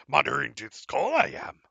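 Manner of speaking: creaky, rough, rasped-out voice. Interrupting a roleplay call as Master Yoda: Yoda voice. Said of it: "Oh, I'm sorry, Master Yoda".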